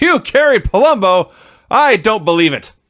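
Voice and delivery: slow, high-pitched, drawn-out, disbelieving announcer voice. Recapping a wrestling segment, quoting the interviewer's reply in Gene Okerlund's Mean Gene voice. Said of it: "in his Mean Gene voice".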